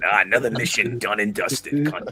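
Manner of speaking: belted out loudly, full voice. Joking about matching a co-host's Australian look, talking like the Resident Evil 4 merchant. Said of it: "talking like the merchant from Resident Evil Four".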